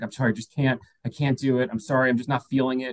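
put-on panicked, pleading voice. Retelling a phone call where she canceled: imitating someone panicking. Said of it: "almost having, like, a panic attack on the phone".

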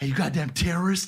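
loud stage whisper. Retelling a man rocking his baby who insulted the speaker, imitating a loud whisper. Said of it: "he did a loud whisper".

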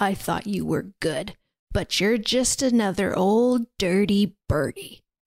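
calmed-down, calm tone, fury dropped. Retelling a plot scene after she calms down: imitating someone speaking quietly. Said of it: "just quietly is like".

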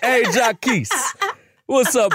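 Barbadian island accent. Speaker acts out a visiting father's greeting, in a Barbadian accent.

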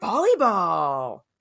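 grand, dramatic announcer-style voice. Imitating how someone replied about hobbies, announcer voice. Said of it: "exactly like that. / That's like announcer voice".

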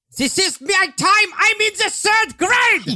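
piercing, shrill outburst, very high. Suggesting what a character might yell, yelling as Wilhelmina. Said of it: "would she ever yell a word?".

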